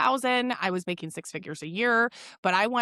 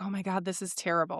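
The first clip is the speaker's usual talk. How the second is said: mock self-pitying whine, quieter; 5 dB quieter than usual. Imitating her past self while nannying: mock self-pity. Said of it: "I was very woe is me".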